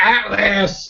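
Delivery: loud, high, drawn-out shout. A player's character runs while calling out to someone, shouting a name. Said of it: "shouting like".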